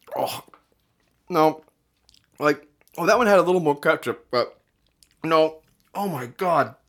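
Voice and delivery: mouth full of food while speaking. Eating while voicing thoughts to the listener, talking with mouth full. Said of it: "Why am I taking such big bites of this?".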